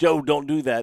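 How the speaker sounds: high-pitched scream, loud enough to carry far. Retelling what Rick screams each morning: imitating Rick screaming. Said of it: "gets out of bed in the morning and just screams".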